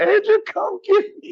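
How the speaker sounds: very high, pleading, on the verge of tears. Retelling calling from a payphone while stranded at sundown: retelling own near-tearful plea. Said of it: "and I'm about to cry".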